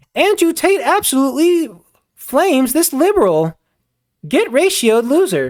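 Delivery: synthetic, stupid-sounding text-to-speech robot voice. Speaker mocking viral clips voiced in the stupid robot voice. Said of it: "that stupid robot voice that everybody uses".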